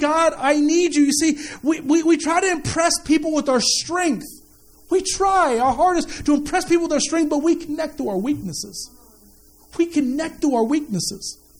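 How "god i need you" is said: put-on weeping and crying, much slower. Speaker recalls being on the ground praying: acting out weeping and crying. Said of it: "I'm just on the ground weeping and crying".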